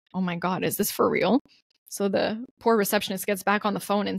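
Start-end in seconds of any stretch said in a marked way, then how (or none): 0.2-1.4 acted-out incredulous disbelief. Retelling overhearing a woman screaming at a receptionist: retelling own disbelief. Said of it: "I'm just".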